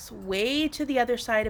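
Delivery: ordinary delivery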